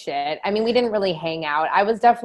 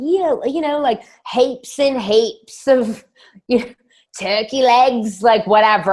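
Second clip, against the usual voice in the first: bad put-on New Zealand accent, high and loud; 6 semitones higher, 5 dB louder than usual. Recalling doing impressions of people as a kid, terrible Kiwi accent. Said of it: "I do a terrible Kiwi accent, but I'd be like".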